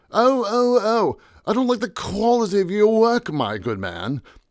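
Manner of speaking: put-on posh English accent, very high. Retelling what happened after Eastman's complaint, the speaker does his Lord of the Manor impression. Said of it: "I did my Lord of the Manor impression, a rich guy with an English accent".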